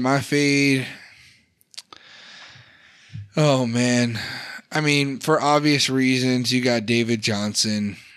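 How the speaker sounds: beaten-down, deflated, defeated tone. Announcing his pick for the round to a co-host, sounding defeated. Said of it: "you sound so defeated".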